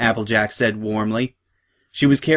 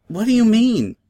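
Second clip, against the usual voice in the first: very high pitched, small, said aside; 11 semitones higher than usual. Pulled aside by her friends, asking Applebloom what she means, said quietly. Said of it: "said Sweetie Belle quietly".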